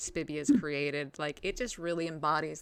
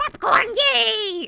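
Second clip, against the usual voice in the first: very shrill, very loud gremlin-like creature screech; 14 dB louder than usual. Voicing a gremlin that grabs corn and runs off: gremlin screaming.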